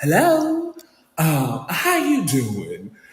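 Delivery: angelic, very slow, swooping Southern belle drawl. Retelling a phone call, voice the woman who came on the line, imitating Phaedra. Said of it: "angelic voice of a Southern belle".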